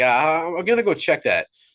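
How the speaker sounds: kind tone, but uncanny and unsettling. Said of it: "He's like".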